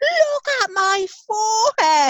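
play-acted horrified shriek, very high-pitched and slow. Retelling how he looked in the mirror and then screamed, imitating the scream. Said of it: "and then he screamed".

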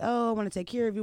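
ordinary delivery

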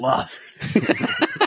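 giddy laughing squeal. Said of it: "It's like".

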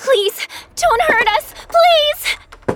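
pleading in a panic. Jenna, trapped as the mummy comes for them, begs: panicked pleading. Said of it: "Jenna, calm down".

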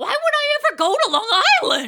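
very loud, high-pitched, shrill, furious shouting. Speaker reenacts their angry quote of the night: retelling an angry outburst. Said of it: "I angrily say".

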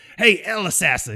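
put-on North Carolina accent. Retelling what a drill sergeant called out: imitating a north carolina accent. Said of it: "He's got this North Carolina accent".

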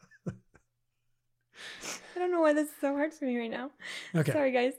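speaking through giggles. Trying to get through reading it for the guys, got the giggles. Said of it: "I feel like I got the giggles".

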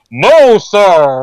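mock big, booming, amplified megaphone-style voice. Retelling a guy answering dr. no about a killing, big amplified voice. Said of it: "there's this big amplified".

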